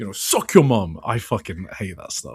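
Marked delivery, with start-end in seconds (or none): 0.1-1.0 put-on British street roadman accent. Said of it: "can you do a Gabe accent for us?".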